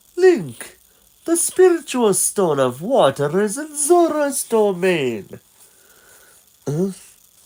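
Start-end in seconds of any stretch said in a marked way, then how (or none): 0.2-5.4 swooping, swinging cartoon owl voice. Reading game dialogue aloud, the owl addresses Link: Kaepora Gaebora owl voice. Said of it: "This voice of Kepora Kepora".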